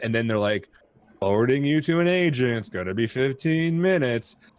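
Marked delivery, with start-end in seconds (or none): 1.2-4.4 mock snarky automated computer voice. Retelling a phone support line's message: imitating a snarky computer voice. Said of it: "You're awful snarky for a computer voice".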